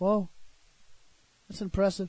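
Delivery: soft, flat, unchanging monotone deadpan. Reacting to someone who remembers everything from Dragon Ball Z: monotone deadpan. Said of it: "Same monotone voice doesn't change".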